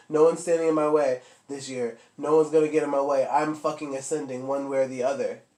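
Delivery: ordinary talk, nothing marked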